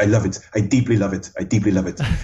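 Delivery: put-on French accent. Quoting his response when he is genuinely excited, in a French accent. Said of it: "in that French accent".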